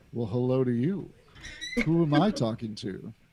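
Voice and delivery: seductive, sultry, very low man's voice. Voicing a trapped man answering through a hole in stone: sultry, sexy man's voice. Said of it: "oozing with sexuality, this, this man's voice".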